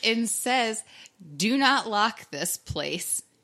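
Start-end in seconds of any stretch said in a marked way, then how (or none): 1.4-3.2 put-on heavy Spanish accent, laid on thick, slow. Retelling what a girl outside the apartment said, in a thick spanish accent. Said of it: "she had this really thick Spanish accent".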